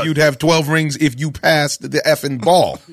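usual speaking voice

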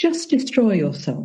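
put-on tender, comforting, sweet, gentle, kind voice. Repeating the message heard after meditation: imitating a sweet, gentle, kind voice. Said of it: "very sweet and very gentle and very kind".

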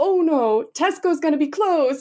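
attempted, put-on Cork accent, very high. Retelling what a woman exclaimed on the sidewalk, trying her cork accent. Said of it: "but with her accent, which I will try".

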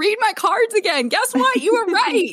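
very high, loud, gleeful squeal.

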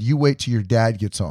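ordinary talk

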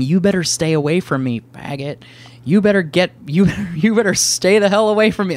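mock all-out high, loud screaming. Retelling how a man crossing the street screamed at him, imitating the screaming. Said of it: "and he's screaming".

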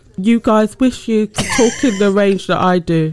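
teasing, mocking delivery. Mocking a friend's boast by repeating it: imitating another speaker. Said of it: "it's more like".

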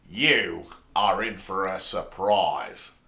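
slow, drawn-out character voice. Listing Doctor Who companions, doing a Tegan impression. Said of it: "That's my Tegan impression".

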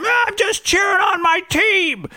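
mock very high-pitched, drawn-out yell. Retelling how the dad yelled back at a media worker on the field: imitating dad yelling back. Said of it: "so yelling back at him".

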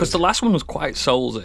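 ordinary talk, nothing marked

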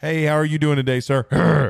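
angry, gruff, growling voice. Acting out the girlfriend's dad greeting you, imitating a growl. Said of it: "like he growls at you like".

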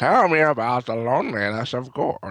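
weird 1920s gangster voice. Planning to say this tomorrow while helping a student, in a weird 1920s gangster voice. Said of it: "in your weird uh, 20s uh, gangster voice there".

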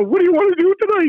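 squeaky, very high-pitched voice. Retelling how, at nineteen, he asked a wrestler a question: imitating own high squeaky voice. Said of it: "with the high squeaky voice saying".

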